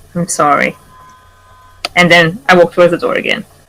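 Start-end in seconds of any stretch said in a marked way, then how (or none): 0.2-0.8 put-on whispering, lower pitch. Voicing a character leaning over a wounded friend: whispering in character. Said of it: "lean over you and whisper".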